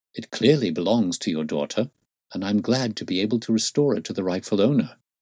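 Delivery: ordinary delivery, nothing marked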